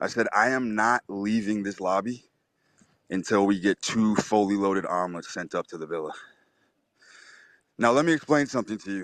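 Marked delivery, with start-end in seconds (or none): 0.3-6.1 low, flat, expressionless deadpan insistence. Retelling a demand to the GM to send omelets up: retelling own deadpan line.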